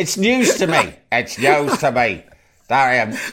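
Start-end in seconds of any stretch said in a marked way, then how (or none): 0.0-2.2 bad Northern Irish accent, slow and drawn out. Speaker retelling what Gerry Adams said, bad Gerry Adams impression. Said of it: "I can't really do the Northern Irish voice".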